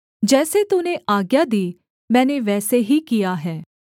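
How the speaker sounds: plain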